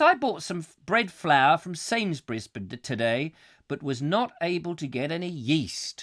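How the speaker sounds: normal talking voice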